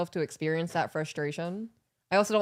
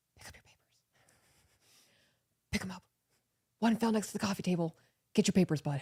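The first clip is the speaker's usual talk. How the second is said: put-on lowered voice; 2 semitones higher, 3 dB quieter than usual. Retelling instructions given to Bud after he got sidetracked: retelling a lowered voice. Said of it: "I drop my voice now".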